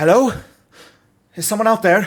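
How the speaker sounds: frantic, very panicked cry, very high and loud. A voice answers through the static after a call, very panicked. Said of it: "you hear a very panicked voice come through the static".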